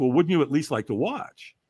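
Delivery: normal talking voice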